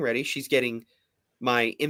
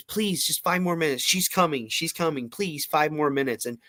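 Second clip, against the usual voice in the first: put-on pleading voice, pitched much higher; 2 semitones higher than usual. Speaker recalls sitting there as a kid: retelling a childhood plea. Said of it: "she starts with this manipulation act of like".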